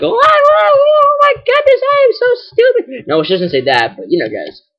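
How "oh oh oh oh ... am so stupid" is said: very high, thin, squeaky put-on character voice. Showing what a gym leader says when talked to: Jasmine voice. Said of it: "and she's like".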